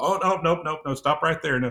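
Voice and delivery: high-pitched, impatient voice.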